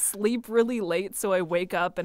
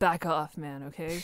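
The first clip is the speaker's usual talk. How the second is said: put-on pissed-off low voice, quieter; 3 semitones lower, 4 dB quieter than usual. Showing how the voice sounds when pissed off: showing angry lower voice. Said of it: "So I think if I'm pissed".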